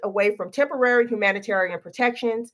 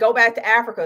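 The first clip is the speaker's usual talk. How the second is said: ordinary talk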